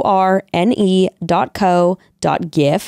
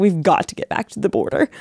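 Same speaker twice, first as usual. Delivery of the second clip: spoken with real urgency; 3 dB quieter than usual. Retelling a friend's line while making serious plans: imitating an urgent tone. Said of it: "so urgent".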